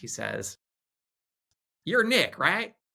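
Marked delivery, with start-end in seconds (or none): 1.8-2.7 put-on really thick country accent, pitched very high. Retelling a man approaching him after speaking on stage, in a thick country accent. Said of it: "in his really thick, sort of country accent".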